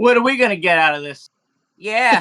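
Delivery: duck voice. Voicing ducks questioning a player: voicing a duck. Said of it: "The three ducks look at each other".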